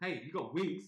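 mock shouting. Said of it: "I'd be shouting at this cartoon".

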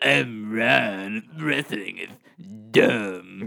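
very slow, drawn-out, blunt, dismissive put-on voice. Doing an impression of the co-host when asked for his best Ron: imitating Ron. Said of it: "Do you wanna give me your best Ron?".

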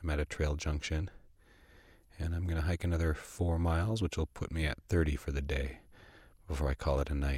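quiet, soft, hushed voice. Hiker at a trail junction, keeping it down for campers nearby: quiet voice. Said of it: "I'm trying to talk in a quiet voice right now".

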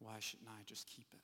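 soft, hushed stage whisper, half to oneself. Retelling a film scene, quoting Bilbo: imitating Bilbo half-whispering. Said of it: "and he whispers to himself".

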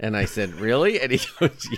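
ordinary talk

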